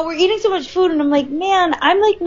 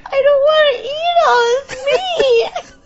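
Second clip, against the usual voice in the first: put-on, high, frazzled, flustered and overwhelmed voice; 9 semitones higher than usual. Retelling a meal with too much meat: retelling own frazzled voice. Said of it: "getting frazzled 'cause I'm like".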